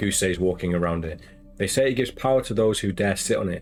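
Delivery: plain reading voice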